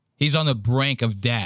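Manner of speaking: usual speaking voice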